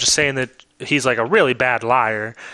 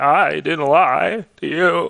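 very slow, voice nearly cracking; 3 semitones higher than usual. Speaker retelling a man insisting he told the truth, imitating an almost-cracking voice. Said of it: "voice was almost cracked".

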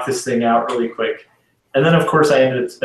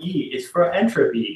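put-on talking like a small toddler; 4 semitones higher, 4 dB quieter than usual. Retelling how he goes through the alphabet, in a toddler voice. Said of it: "but in a toddler voice".

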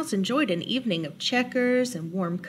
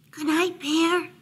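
gentle, light, high-pitched calling out; 5 semitones higher than usual. Reading Mouse calling to Bear as Bear is about to drift off, softly. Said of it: "Mouse called softly".

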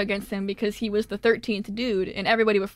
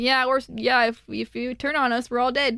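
usual speaking voice

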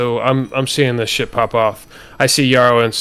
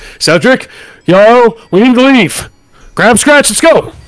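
very high, rising shout from the side of the mouth; 11 semitones higher, 7 dB louder than usual. A player in character, hoping not to be noticed, calls to a companion, shouting out corner of mouth. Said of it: "I'm shouting like kind of out the corner of my mouth".

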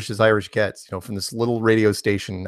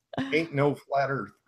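put-on Southern accent, higher; 5 semitones higher, 7 dB quieter than usual. Told to search flat earth in a southern dialect, speaker tries it: put-on southern accent. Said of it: "Try it in like a Southern dialect".

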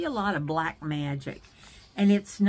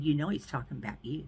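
soft, hushed half-whisper under the breath; 5 semitones lower, 6 dB quieter than usual. Retelling what someone leaned over and said during a service, imitating a half-whisper. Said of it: "Jerry leans over and whispers to me".

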